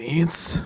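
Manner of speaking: trembling, quivering voice. Voicing a character who recognizes a dead friend: trembling voice. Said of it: "with his voice trembling".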